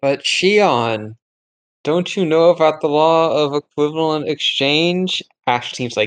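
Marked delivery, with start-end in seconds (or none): 0.0-5.2 slow, half-weary, half-sarcastic delivery. Speaking in character to another player's character: half tired, half sarcastic. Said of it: "half actually tired, half sarcastic as she's saying this".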